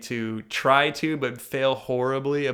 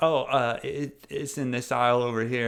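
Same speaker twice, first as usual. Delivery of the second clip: mock nervous stuttering, stammering. Retelling how a store stocker answered a random question, imitating nervous stuttering. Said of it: "He was nervous and stuttering".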